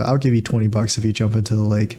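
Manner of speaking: ordinary talk, nothing marked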